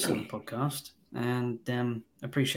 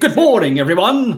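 very loud, theatrical, stagey actor's delivery; 8 semitones higher, 16 dB louder than usual. Joking about greeting coworkers like the film actors: mock theatrical actor delivery. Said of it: "go to work and speak like that".

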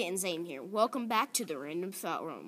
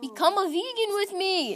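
shrill, very high, loud yell; 13 semitones higher, 8 dB louder than usual. Urging the other speaker to go vegan, yelling. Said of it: "Stop yelling".

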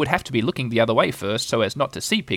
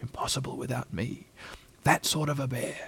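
proud, very quiet murmur; 11 dB quieter than usual. A bear off in the corner of the room speaks to himself, proudly. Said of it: "he said proudly to himself".

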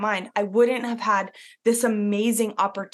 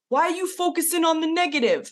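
put-on New York accent, pitched up; 8 semitones higher than usual. Quoting dad's reply to the speaker's worry, in his new york accent. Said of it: "in his New York accent".

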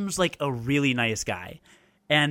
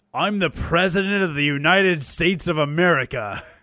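loud, terrible, cheesy nineties voice-acting style; 3 semitones higher, 5 dB louder than usual. Quoting the last line of a game: terrible nineties voice actor voice.

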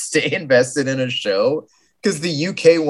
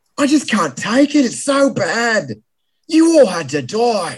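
put-on Australian accent, pitched up; 8 semitones higher than usual. Joking about Chef Ramsay on Hell's Kitchen, speak in a put-on Australian accent. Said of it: "That's Australian".

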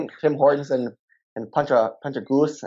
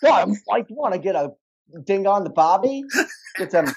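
exaggerated Australian accent; 7 semitones higher than usual. Chatting about australian accents and showing the typical one, typical australian accent. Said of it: "Do you want me to go like the typical Australian?".

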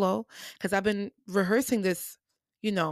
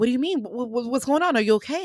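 put-on flustered, panicky, frantic, stumbling tone; 4 semitones higher, 4 dB louder than usual. Retelling a director's panicked questions backstage before a show: imitating a frantic director. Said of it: "she's frantic".

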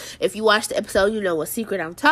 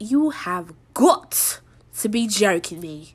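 put-on British accent in a stunned, shocked outburst. Retelling a reaction to a shocking TV ending: put-on British accent. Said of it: "I had to break out the British accent".

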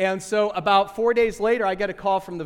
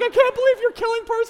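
very high-pitched, tearful crying voice; 4 dB louder than usual. Retelling what his wife said while she cried, imitating his wife crying. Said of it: "She's crying".

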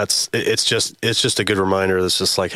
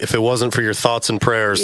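ordinary talk

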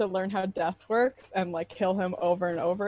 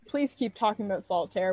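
ordinary talk, nothing marked

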